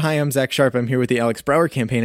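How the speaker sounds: ordinary talk, nothing marked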